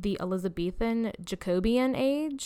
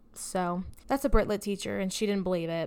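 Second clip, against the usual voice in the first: ordinary talk, nothing marked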